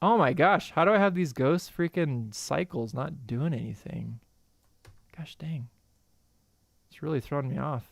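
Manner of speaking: fed-up, frustrated, exasperated complaining. Showing their process, keyframes not doing anything: frustrated. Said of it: "Sorry, if I'm getting frustrated".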